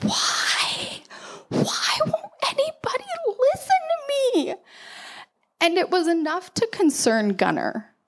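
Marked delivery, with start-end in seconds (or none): 0.0-4.5 very high, slow, drawn-out hushed whisper. Recalling lying in the fetal position, rocking: retelling own past whisper. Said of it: "just kind of like whispering".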